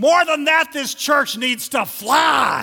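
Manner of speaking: very loud, very high, booming preacher-style bellow. Telling a joke, quoting a preacher to his church, bellowing. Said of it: "the preacher bellowed".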